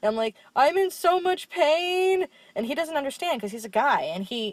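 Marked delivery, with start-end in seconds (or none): 0.6-2.3 very high, very slow, pained sobbing voice, drawn out. Retelling telling someone on the phone: imitating sobbing while talking. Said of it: "crying and sobbing my eyes out".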